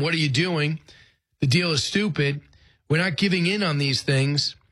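normal talking voice

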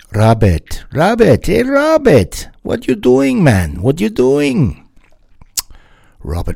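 bad put-on Jamaican accent, loud and sing-song. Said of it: "that's terrible Jamaican accent creeping in there".

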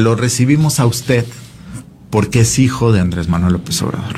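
ordinary delivery

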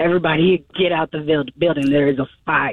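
normal talking voice

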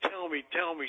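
excited, keen, eager pleading tone. Retelling how an environmentalist on the porch answered: imitating someone excited. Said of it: "She's really excited".

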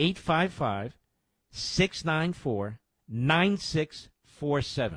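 slow, deliberate delivery. Host repeating a phone number for listeners, said slowly. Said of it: "Let me say that slowly".

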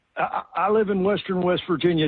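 ordinary talk

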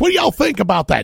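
very high, loud voice with Georgia accent. Speaker imagines sitting with people from three places, Georgia Southern accent. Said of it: "My best Boston".

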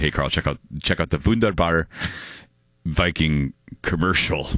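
normal talking voice

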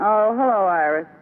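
low, downcast, dispirited, glum-sounding voice. Answering a phone call, the speaker sounds low and glum. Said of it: "You sound low".

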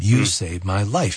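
usual speaking voice

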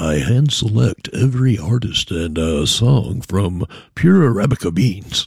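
very low, deep commercial announcer voice. Borrowing a voice for a moment to talk about the music played, coffee commercial voice. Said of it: "borrow a coffee commercial voice".

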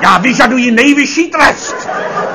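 grand, high, loud theatrical voice, slowing down.

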